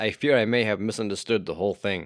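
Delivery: ordinary delivery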